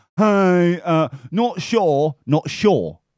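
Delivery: put-on drawn-out, very slow Australian accent. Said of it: "'cause that's how it sounds like".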